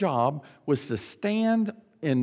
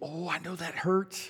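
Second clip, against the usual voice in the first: acted gentle, comforting, soft motherly sympathy; 6 dB quieter than usual. Recalling a childhood splinter, the speaker acts out the mother's reaction; imitating sympathetic mother. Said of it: "she'd wince, you know, like, Oh".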